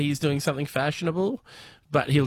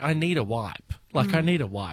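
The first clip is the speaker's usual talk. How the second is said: usual speaking voice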